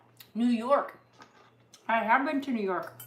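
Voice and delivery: talking while chewing, mouth full. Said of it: "Now my mouth is full".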